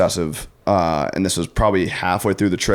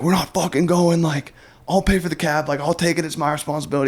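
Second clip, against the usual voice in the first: very high, furious, angry screaming; 10 semitones higher than usual. Retelling a hungover morning, quoting someone who screamed at them: acting out an angry scream. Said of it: "Caleb's like screaming at me".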